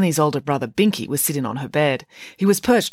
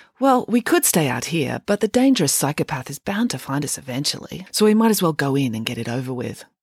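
plain

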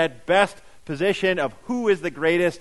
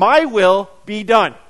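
raised voice forced through clenched teeth; 2 semitones higher, 7 dB louder than usual. Picturing themselves trying to be God, acting out speaking through clenched teeth. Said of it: "telling him with clenched teeth".

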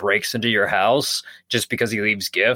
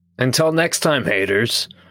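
put-on monster voice. Signing off the episode to listeners: Krampus voice. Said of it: "Was that supposed to be Krampus?".

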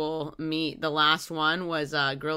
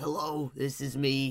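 hoarse, raspy lost voice, quieter; 2 semitones lower, 5 dB quieter than usual. Showing the others a voice lost since the weekend: hoarse, raspy voice. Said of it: "can you hear the raspies?".

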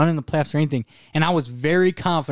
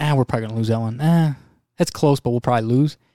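mock downbeat, resigned, pessimistic grumbling; 3 semitones lower than usual. Retelling betting on games while sitting there: imitating own pessimistic grumbling. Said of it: "I was being very pessimistic. Like, I was sitting there going".

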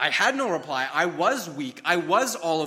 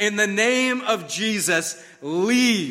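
mock full-voiced bellowing at top of lungs; 4 semitones higher, 4 dB louder than usual. Retelling a dream where Satan appears, the speaker is bellowing at the top of lungs. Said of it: "at the top of my lungs, I bellowed it".

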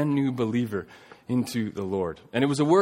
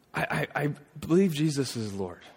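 mock sobbing, stammering, bawling hard through tears; 3 semitones higher, 3 dB quieter than usual. Retelling a sixteen-year-old's words said through tears: retelling Mike bawling through tears. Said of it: "through tears, just bawling".

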